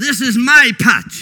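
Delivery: put-on American accent, very loud. The speaker retells what a boy told him, in a put-on American accent. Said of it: "He spoke with American accent".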